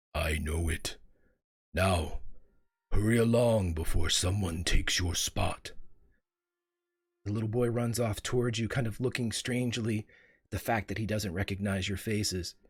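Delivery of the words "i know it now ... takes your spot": comforting, unhurried, booming, slow, low tree voice. Voicing the great tree as it speaks to the little boy: booming, comforting, slow voice. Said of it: "You see the great tree lean down. / And you hear a booming voice, / comforting and slow. / I am old".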